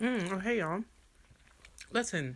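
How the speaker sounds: talking with mouth full of food, chewing. Greeting the audience mid-bite, before finishing chewing: talking while chewing. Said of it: "let me finish chewing".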